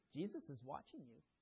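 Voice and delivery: tiny, very quiet, small little voice. Telling a joke, the narrator voices what a burglar hears in a dark house: small voice. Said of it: "he hears this small voice that says".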